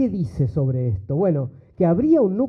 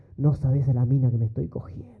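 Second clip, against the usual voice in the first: mock, conspiratorial, complicit put-on tone; 5 semitones lower, 4 dB quieter than usual. Retelling what one man said to another, in a retold complicit tone. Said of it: "Así con ese tono, ¿no? Cómplice".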